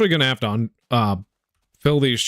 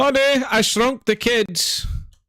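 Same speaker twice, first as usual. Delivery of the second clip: put-on Irish accent, much higher pitch; 13 semitones higher than usual. The speaker keeps repeating a movie title in an Irish voice. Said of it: "Why do you keep doing that?".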